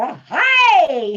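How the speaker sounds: very loud, stretched-out, drawn-out "hi". Imitating another speaker's loud hello: loud Bozo greeting. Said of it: "That was like Bozo going".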